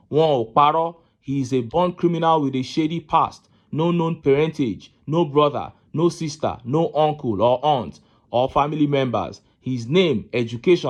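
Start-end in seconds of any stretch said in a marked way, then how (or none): none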